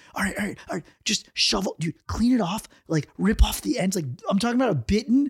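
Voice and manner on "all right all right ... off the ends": put-on secretive hushed whisper. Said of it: "secretly were like".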